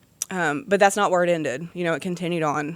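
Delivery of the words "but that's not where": plain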